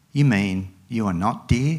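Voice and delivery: ordinary talk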